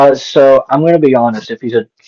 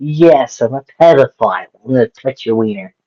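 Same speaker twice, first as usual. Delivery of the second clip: sarcasm laid on thick, heavy and dripping; 3 dB quieter than usual. Asked how Tenny responds to an accusation, a player answers as him: very sarcastic. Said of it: "No, very sarcastically".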